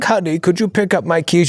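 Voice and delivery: put-on decrepit old man voice. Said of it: "Old man with a cane".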